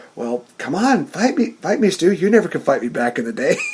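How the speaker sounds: put-on voice of another man, goading. Acting out how he taunted his old man, retelling an imitated voice. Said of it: "he sounds just like".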